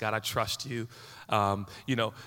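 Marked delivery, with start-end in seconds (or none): none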